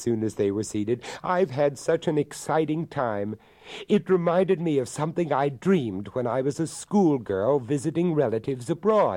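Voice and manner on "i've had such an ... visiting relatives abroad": keen, eager, pitched-up delivery. Elizabeth addresses her darling once they are seated, eager. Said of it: "said Elizabeth eagerly".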